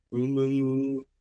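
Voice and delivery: mock mumbling, low and booming.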